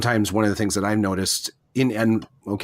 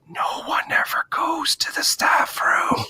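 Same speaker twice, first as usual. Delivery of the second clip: breathy, slow, too-loud stage whisper meant to carry. Retelling what a teacher said on the way out: imitating a loud stage whisper. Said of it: "it was like a stage whisper".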